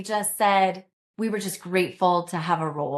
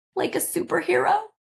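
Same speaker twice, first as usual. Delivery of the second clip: put-on very high, tearful little-girl voice, crying; 11 semitones higher than usual. A mother retells her child's reply to hearing about the mission, imitating a tearful child. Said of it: "Through her tears".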